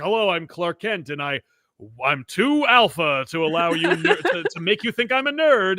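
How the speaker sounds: plain, straight delivery that trips mid-sentence. Mocking an actor's Clark Kent performance: imitating Henry Cavill as Clark Kent. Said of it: "But he's like".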